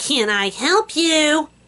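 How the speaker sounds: high-pitched, drawn-out, snotty voice. Retelling a woman answering the school buzzer, mimicking her snotty voice. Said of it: "in this snotty voice".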